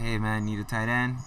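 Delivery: normal talking voice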